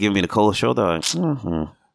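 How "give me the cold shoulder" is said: ordinary talk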